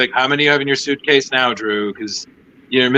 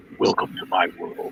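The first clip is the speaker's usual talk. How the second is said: breathy, whispered, breathed out; 7 semitones lower, 8 dB quieter than usual. Retelling a photo where the line was said to him: Batman voice. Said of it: "that, you know, Batman says".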